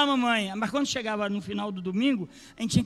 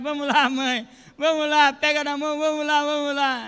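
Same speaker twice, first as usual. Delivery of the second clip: put-on child's voice, insistent, repeated pleading; 6 semitones higher than usual. Retelling tugging a mother's skirt as her child, imitating a child pleading. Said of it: "Você pega assim na saia".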